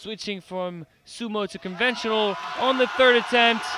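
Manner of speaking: thrilled, loud, high-pitched excited commentary call.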